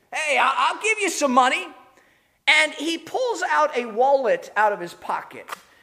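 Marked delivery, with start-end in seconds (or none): 0.1-1.6 acted-out, showy display of generosity. Describing a man who sees bystanders nearby, retelling his remark: retelling a loud remark. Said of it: "in a rather loud voice".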